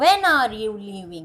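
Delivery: starts high on when, pitch falls on leaving. Hindi lesson on english intonation: high on when, falling on leaving. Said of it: "when में आवाज कहाँ गई, ऊपर, और leaving में कहाँ आ गई, नीचे".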